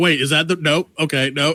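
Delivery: normal talking voice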